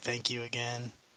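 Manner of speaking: soft, close, barely breathed, hushed half-whisper. Voicing a character thanking a friend during a hug: half-whispering. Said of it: "I just whisper".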